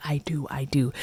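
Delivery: very soft, hushed whisper. Retelling a scene where the mom silently mouths along at the altar, imitating a mom whispering.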